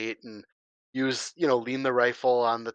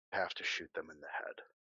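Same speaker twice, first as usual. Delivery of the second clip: very soft, hushed, barely audible under-the-breath mutter; 7 semitones lower, 13 dB quieter than usual. A narrator gives Andy's line as he takes the rifle, softly under his breath. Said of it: "just says really softly under his breath".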